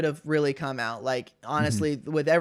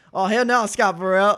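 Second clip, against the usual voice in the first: put-on Southern twang accent; 5 semitones higher, 6 dB louder than usual. Recalling the north carolina kid coming out in a great player, imitating a southern twang. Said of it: "that Southern twang where he'd be like".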